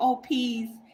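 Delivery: laid-back, relaxed delivery. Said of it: "How he says it?".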